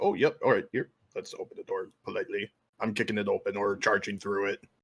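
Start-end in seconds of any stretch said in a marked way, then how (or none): 0.0-2.5 mockingly courteous. A player charging through a door, mocking the idea of stopping: mock-polite. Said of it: "I'm not stopping to just like".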